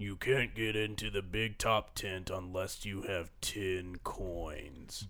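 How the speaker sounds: very gravelly, deep, low bouncer voice. A Thwomp sitting in the tent entrance addresses the approaching player, gravelly Thwomp voice. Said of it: "and you see a very large thwomp sitting in the entrance of the tent. The thwomp is one of those square... one of those squares with all the spikes around the edge. ... and he says in a very gravelly voice".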